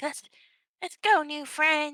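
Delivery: cute, high little voice. Voicing Squishy greeting Whisper as a new friend: voicing Squishy. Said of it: "Squishy's like".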